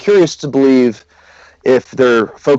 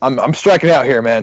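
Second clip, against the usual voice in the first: plain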